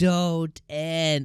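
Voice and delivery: mild, high-pitched yell. Recapping an episode, retelling how she yelled out as it ended. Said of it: "I literally yelled out".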